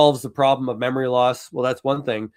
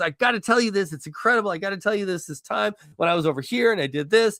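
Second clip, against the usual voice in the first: high, pitched-up, really animated excitement; 7 semitones higher than usual. Act out Kevin Hart interrupting a show's host, in a really animated Kevin Hart impression. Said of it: "he'll get like really animated and goes".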